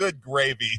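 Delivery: put-on big-voiced radio announcer voice. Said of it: "he was doing the whole Big Voice Radio guy".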